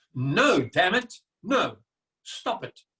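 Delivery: firm, emphatic, absolutely assertive tone. Coaching a listener to say no, the speaker demonstrates it with absolute assertiveness. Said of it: "mean it with absolute assertiveness".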